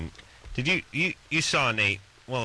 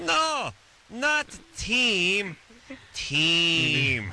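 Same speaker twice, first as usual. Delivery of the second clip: put-on heavy Russian accent, very high voice, Team stretched out; 12 semitones higher than usual. Imitating a kid correcting the speaker about his name, in a thick russian accent. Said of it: "this kid had a thick Russian accent".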